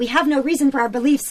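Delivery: mock loud, high declaration. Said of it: "was saying very loudly".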